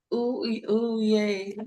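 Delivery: small, tiny-sounding voice, high and slow. Reading a listener's comment aloud to the other speaker: little voice. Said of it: "I read that in my little voice".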